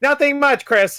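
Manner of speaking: very high, smooth voice-assistant voice. Retelling how the assistant answers a greeting: imitating Alexa. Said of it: "And she'll be like".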